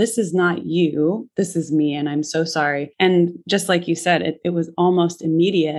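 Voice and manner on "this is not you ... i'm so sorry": ordinary talk, nothing marked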